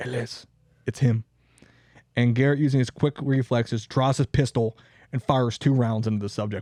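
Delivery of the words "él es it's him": hushed, quiet whisper. Telling the story of Billy the Kid's death, retelling a whisper. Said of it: "Maxwell whispers to Garrett and goes".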